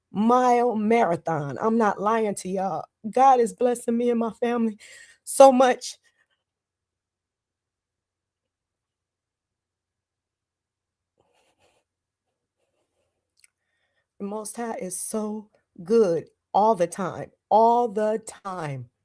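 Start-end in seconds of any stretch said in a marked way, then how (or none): 1.7-18.9 high, trembling voice quivering with joy. Telling listeners how blessed they and their family are, in a happy, trembling voice. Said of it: "that was happy voice trembling".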